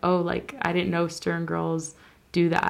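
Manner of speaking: normal talking voice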